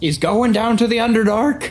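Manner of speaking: huffily shouting. A mother waves off her son and calls out to the forge, huffy shout. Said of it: "waves off her son in a huffy voice, shouts out".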